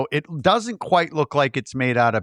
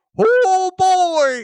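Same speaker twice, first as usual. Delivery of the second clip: mock very high, gleeful, excited cry; 5 dB louder than usual. Describing a film character's sudden change of mood, mock-excited 'oh boy'. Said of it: "like he's all excited".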